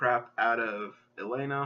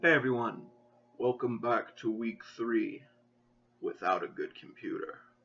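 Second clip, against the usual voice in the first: deliberately spooky, horrible put-on monster voice. Opening a video by greeting everyone, in a horrible, scary voice. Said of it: "That was a horrible, scary voice".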